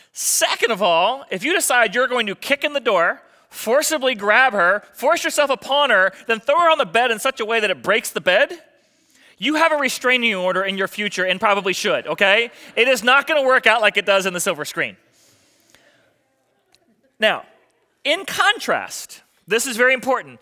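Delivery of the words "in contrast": "in contrast" stressed, drawn out slow and high. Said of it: "The reason why I stress the word".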